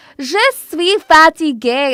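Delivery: mock British speaker's French accent. Recalling a French teacher at a British school: imitating British French teacher. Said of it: "she'd be like".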